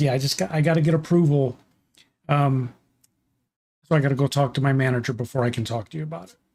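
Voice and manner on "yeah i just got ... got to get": plain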